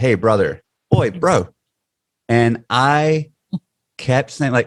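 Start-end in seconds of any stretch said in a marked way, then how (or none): 0.0-1.5 put-on New Zealand accent, lower. Recalling a trip to new zealand, mimicking how the locals say it: imitating new zealand 'oi, bro'. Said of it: "in New Zealand, and they say, "Oi, bro," in this really specific way".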